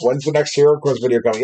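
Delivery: ordinary delivery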